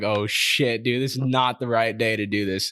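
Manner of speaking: put-on panicked voice. Retelling own words on realizing he forgot someone: imitating own panic.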